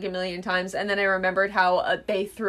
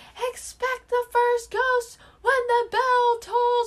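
put-on announcer voice, pitched higher. Retelling a movie scene, quoting Gonzo's ghost warning: imitating Gonzo's ghost announcement. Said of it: "you hear Gonzo going".

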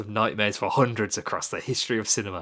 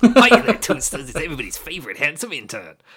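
loud, swooping put-on character voice; 4 semitones higher, 7 dB louder than usual. Reading a listener's email aloud, giving the writer a put-on handsome intern voice. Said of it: "I'm going to give him a voice".

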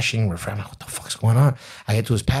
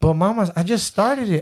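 put-on high-pitched protesting voice; 9 semitones higher than usual. Retelling his reply to a woman about his video's views, high-pitched voice. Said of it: "I'm talking in a high-pitched voice".

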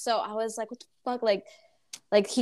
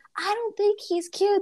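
put-on yelling, higher pitch; 10 semitones higher than usual. Retelling a classmate's outburst at the lunch table: imitating someone yelling. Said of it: "Then she started yelling".

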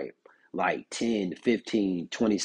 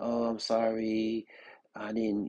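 tearful, crying, very slow delivery; 3 semitones higher, 3 dB quieter than usual. Retelling her apology in therapy: imitating someone crying. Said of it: "She's crying".

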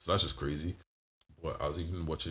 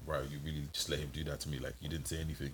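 normal talking voice

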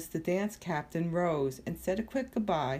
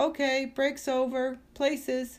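high-pitched voice calling out across the space; 8 semitones higher, 3 dB louder than usual. The choreographer speaks from the stage, calling out. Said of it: "called a voice from the stage".

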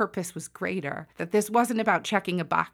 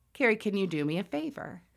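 very quiet, hushed, under the breath; 4 dB quieter than usual. Retelling a request made after finishing a door: imitating someone speaking very quietly. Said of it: "very quietly".

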